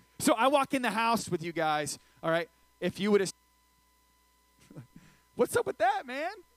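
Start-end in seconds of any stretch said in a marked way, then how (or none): 5.4-6.3 voice goes way up high, sounding mad. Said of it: "I started speaking in a very high".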